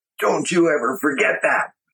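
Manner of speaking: acted furious yell, high-pitched. Retelling how a man across the table screamed at him, retelling a scream. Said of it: "He screamed at me".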